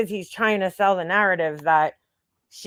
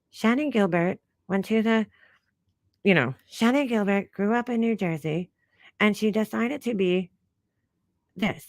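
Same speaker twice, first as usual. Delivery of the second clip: personality-free, dull, bored narration voice. Imitating a boring storyteller's low, monotone narration: imitating a low monotone voice. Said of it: "she always sounds like she's talking like this".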